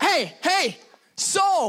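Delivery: mock loud shouting, yelling call across. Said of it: "Sorry, I yell".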